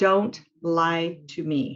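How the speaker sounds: very slow, strong, confident, firm delivery. Demonstrating a line said with more strength, strong and confident. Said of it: "I'm saying that with more strength, with more confidence".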